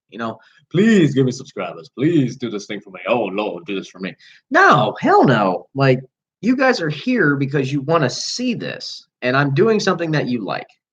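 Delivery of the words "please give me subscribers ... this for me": phony, mock pleading, begging tone. Mocking what asking viewers for subscribers sounds like: mock begging and pleading. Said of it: "I'm not begging and pleading".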